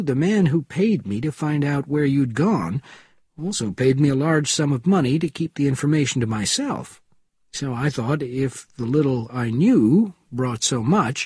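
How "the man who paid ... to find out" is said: ordinary delivery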